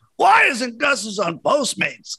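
very high, wild-swinging, swooping scream. Retelling a coach at a fried chicken place: imitating Doc Rivers screaming. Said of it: "screaming at the employees".

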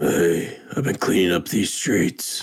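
growled superhero voice on every word. Guessing what voice a performer will use: growly Batman voice. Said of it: "like a growly Batman?".

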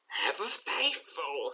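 soft, hissing villain voice. Narrating the scene as Kyogre steps down the dais: Kyogre's hissing voice. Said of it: "hisses Kyogre".

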